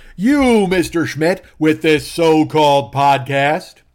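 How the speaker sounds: booming, projected, slow courtroom lawyer voice. Imagining the opposing lawyer addressing him at a trial, in a booming lawyer voice. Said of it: "Listen to how booming my voice is".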